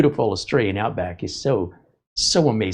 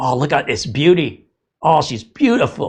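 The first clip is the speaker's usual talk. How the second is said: put-on British accent, higher, fondly admiring; 5 semitones higher, 4 dB louder than usual. Act out a man pulling a lump from a disgusting clog, imitating genuine admiration, accent turning British. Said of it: "be like".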